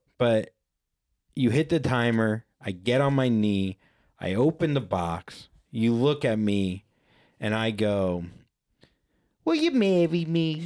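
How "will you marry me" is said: weird, odd, goofy put-on comic voice. Retelling his proposal, he repeats how he asked her: weird put-on voice. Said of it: "why the fuck I went with that voice".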